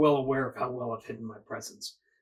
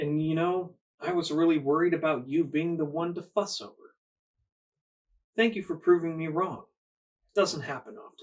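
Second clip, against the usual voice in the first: lordly, regal, courteous, gracious tone; 3 semitones higher than usual. Game master voicing the anarch leader as he accepts the players' gift; anarch leader character voice. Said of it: "There are two hefty-looking Bruja men standing to either side of a lovely three-piece suit-wearing gentleman, about 6'5", blonde hair, stunning blue eyes, holding himself in a regal manner. / There ar".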